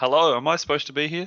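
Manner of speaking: startled, uncertain delivery. Teasing another speaker about how they said hello: imitating a surprised greeting. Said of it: "you sounded a bit surprised there".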